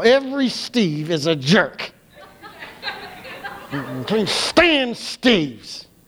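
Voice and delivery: full snarl through every word, slow and swooping. Speaker acts out how people talk about someone they can't stand: mock snarl. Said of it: "you say it with that snarl".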